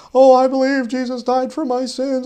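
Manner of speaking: very high, loud, sarcastic mocking tone. Speaker retelling how atheists have mockingly confessed belief: imitating a mocking tone. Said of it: "they'll literally mockingly".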